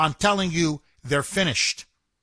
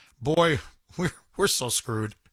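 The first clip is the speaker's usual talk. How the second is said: mock muttering under breath, much lower; 4 semitones lower than usual. Telling another person their reaction on reading it, the speaker repeats the aside: retelling muttering under breath. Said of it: "just under my breath".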